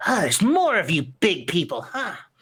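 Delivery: tiny scrappy creature voice, slow and defiant. Voicing a tiny creature taking a fighting stance toward the group: tiny creature voice, squaring up to fight. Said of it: "gets into, like, a wider stance and holds the dagger out and goes".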